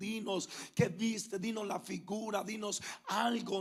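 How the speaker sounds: ordinary talk, nothing marked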